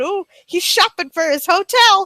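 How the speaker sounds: ordinary talk, nothing marked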